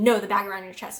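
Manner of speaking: biting, stern, very sharp-toned delivery. Retelling what a flight attendant said about her bag: imitating a very sharp tone. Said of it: "very sharp in her tone".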